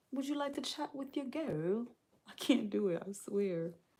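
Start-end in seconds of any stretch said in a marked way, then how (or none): 0.1-1.8 clumsy, bad put-on British accent, pitched up. Streamer asking the chat a question, trying an accent they admit is bad: bad british accent. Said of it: "my British accent is just not good".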